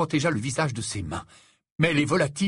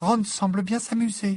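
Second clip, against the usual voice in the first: thin, small, high, unnatural voice; 6 semitones higher than usual. Narrator reads a girl's remark at a party, in a small, high-pitched voice. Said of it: "d'une petite voix aiguë qui ne lui était pas naturelle".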